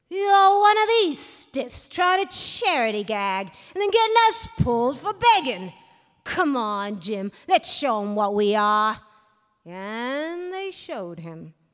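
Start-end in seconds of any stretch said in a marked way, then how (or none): 0.1-9.0 loud, contemptuous, sneering retort. A narrator reads a fellow's reply to a man offering him money, sneering. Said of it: "he sneered".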